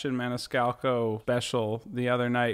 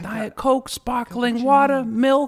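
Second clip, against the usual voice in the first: put-on exasperated Chicago comic voice, higher and louder; 11 semitones higher, 8 dB louder than usual. Retelling a comedy bit about inviting someone over: Sebastian Maniscalco impression. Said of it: "That's Sebastian Maniscalco".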